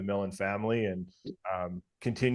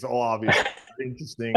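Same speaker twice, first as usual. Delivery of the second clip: put-on mumble under breath, louder; 2 semitones higher, 5 dB louder than usual. Retelling a goalie's joking comments on the wall: imitating mumbling under breath.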